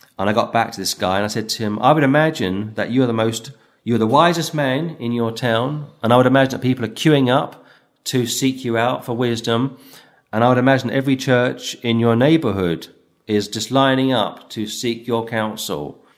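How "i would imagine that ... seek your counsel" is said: ordinary talk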